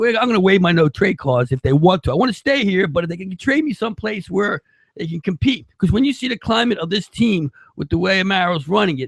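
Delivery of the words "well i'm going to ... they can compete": plain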